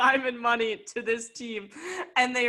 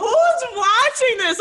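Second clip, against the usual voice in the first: shrill, high, loud furious yell; 11 semitones higher, 9 dB louder than usual. Retelling yelling in a bar about a game on TV; retelling a yell. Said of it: "I'm like yelling in the bar".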